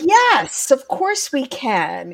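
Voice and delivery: booming, resounding voice. Speaker answering a client's request as if from the classroom front, booming voice. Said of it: "In my booming voice".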